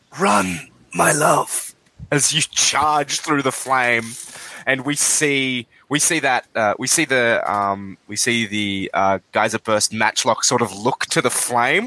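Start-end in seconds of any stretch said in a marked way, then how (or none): 0.2-1.8 whispering, slightly higher pitch. Voicing a line heard over the radio during a charge: whisper. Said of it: "a whisper".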